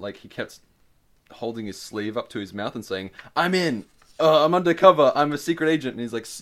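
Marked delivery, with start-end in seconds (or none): 3.4-5.9 very loud, high, shrill yelling. Retelling someone yelling into his sleeve while undercover, imitating someone yelling. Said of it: "he's just yelling into his sleeve".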